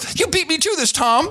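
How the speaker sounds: put-on voice jumping up very high in pitch. Explaining a voice done earlier, the speaker uses a put-on voice, pitch jumping up. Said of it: "That's what it sounds like. It jumps up".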